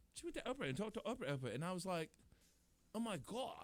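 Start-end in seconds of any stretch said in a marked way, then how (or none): 3.0-3.7 put-on, gushing Valley girl accent. Retelling own reaction to the Oprah interview: Valley girl voice. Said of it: "now I'm talking like a Valley girl".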